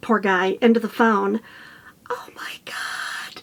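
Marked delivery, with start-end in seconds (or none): 2.1-3.4 hushed, startled, sudden, breathy whisper. Retelling a phone call on spotting something behind a boulder: retelling own whisper. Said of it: "all of a sudden I whisper".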